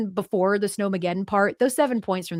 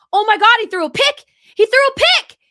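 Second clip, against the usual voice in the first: shrill, very high, very loud excited yelling; 9 dB louder than usual. Retelling hearing the play before it reached the tv: retelling own yelling. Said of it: "And I just start yelling".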